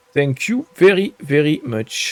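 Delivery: English with a put-on French accent. Selling items in a game and saying thanks, in a put-on french accent. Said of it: "with my good old French accent".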